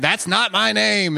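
furious, raspy, high, rough angry screaming. Retelling how a radio show caller yelled when mocked on air, imitating Eric screaming mad. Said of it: "he would get mad and start screaming".

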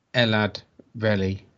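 slow, careful, sounded-out reading. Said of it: "Gotta say it slowly".

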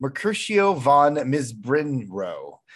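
ordinary talk

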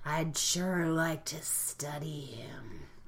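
put-on sinister creepiness, low and slow voice. Retelling how Bones grins over someone, quoting him: Bones mock-creepy voice. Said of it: "in a moment of deep creepiness, grins over him like a creepy neuromancer. And is like, ... In that voice, exactly".

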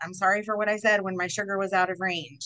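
normal talking voice

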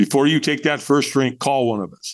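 ordinary talk, nothing marked

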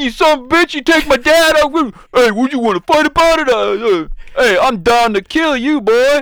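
loud, very high, full Jersey accent. Doing a head-canon version of Grogu's voice, with a Jersey accent. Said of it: "got like the Jersey accent".

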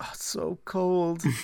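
fake shivering voice. Acting out a line a character pretended to say: fake shivering from cold. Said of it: "is what I would be saying if this had any effect".

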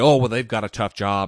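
usual speaking voice

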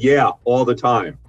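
put-on sarcastic tone. Retelling a woman's reply to his question on campus, mock-sarcastic. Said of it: "which was sarcastic".

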